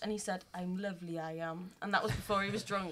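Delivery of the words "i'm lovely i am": put-on gentle, unhurried Indian accent. Quoting what a man she has on Facebook said: imitating an Indian accent. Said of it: "you sound a bit Indian".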